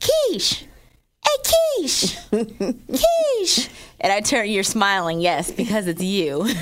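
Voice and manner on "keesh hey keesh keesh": put-on tiny child's call, very high, very slow, sing-song. Retelling how Jet calls out for the speaker; Jet's little voice. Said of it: "I'll hear this little voice".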